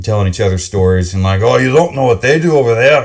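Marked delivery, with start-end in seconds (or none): 1.4-3.1 gossipy, casual, off-the-cuff put-on Scottish accent. Imitating Scotch distillery workers telling each other stories: put-on Scottish accent. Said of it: "that's the best Scotch accent I can give you".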